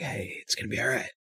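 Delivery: soft whisper. Playing a character comforting someone who tenses up, soft whisper. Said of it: "I just sort of whisper like".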